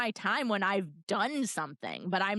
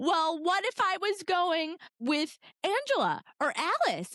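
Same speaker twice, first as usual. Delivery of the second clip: mock riled, mad, pitched-up, challenging tone; 7 semitones higher than usual. Retelling a book scene where Bella answers her father: imitating Bella getting mad. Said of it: "Bella gets all mad and she's like".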